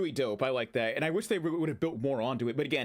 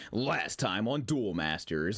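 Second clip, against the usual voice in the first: put-on TV narrator voice; 5 semitones lower than usual. Joking about a narrated game video in the style of the Dragon Ball Z narrator voice. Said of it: "pull that D B Z narrator".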